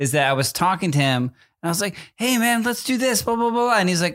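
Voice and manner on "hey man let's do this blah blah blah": very high-pitched, expressive, casual dude voice. Retelling how he talked to his son: imitating own more expressive voice. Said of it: "more expressive, hat backwards me is like Eric".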